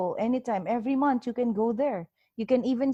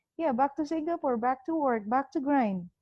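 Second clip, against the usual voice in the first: dry, sarcastic delivery; 3 semitones higher than usual. Retelling own answer to a border officer: retelling a sarcastic reply. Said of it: "answer you back, like, sarcastically".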